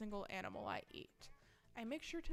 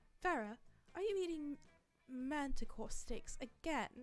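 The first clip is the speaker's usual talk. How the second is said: put-on British accent, higher pitch; 5 semitones higher than usual. Voicing a character questioning another about her meal, in a British accent. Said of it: "it may be time for another British accent".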